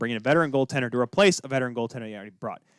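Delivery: normal talking voice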